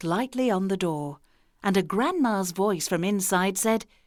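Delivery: ordinary delivery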